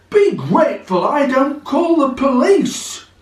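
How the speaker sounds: very high-pitched, outraged voice. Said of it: "That's the dealer!".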